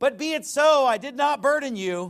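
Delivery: loud, high, angry tone. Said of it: "He's rebuking him hard".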